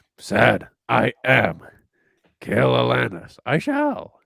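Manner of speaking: put-on loud, rough, creaky, swooping old master rasp. Joking about a character fighting, answering in Yoda voice. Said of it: "That's so not Yoda".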